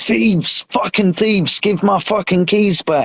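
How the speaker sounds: mock furious yell, toned down to half-shout. Retelling shouting at police who drove off with the keys: retelling a shout. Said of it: "I was shouting".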